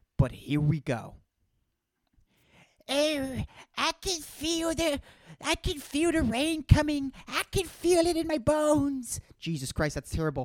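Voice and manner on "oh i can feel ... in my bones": put-on very high, slow, drawn-out elderly voice. Joking about being ageist, the speaker does an old person impression. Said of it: "I'm doing an impression of an old person in general".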